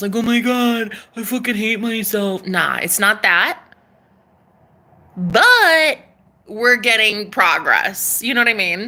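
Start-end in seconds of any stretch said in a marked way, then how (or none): 0.2-2.5 mock drunken sobbing, higher and louder. Imagining the ex's drunk phone call apology, imitating drunk crying. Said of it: "he's crying and it's a drunk phone call".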